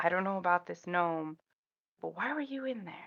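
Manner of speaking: very quiet, hushed, barely above a murmur. A player's character asks a polar bear a question, very quiet. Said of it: "I'm gonna very quietly ask him".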